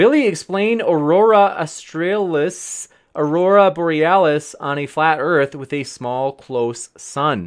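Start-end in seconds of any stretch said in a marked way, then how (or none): none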